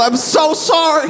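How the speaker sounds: acted-out screaming, way up high. Retelling an apology to someone already far away: retelling a scream. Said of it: "I'm screaming".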